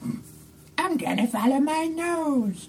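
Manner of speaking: high, soft, slow, drawn-out creature voice. Voicing a character whose face shifts to look like the Grunch: bad Grunch impression. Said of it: "She's not the best at impersonating the Grunch".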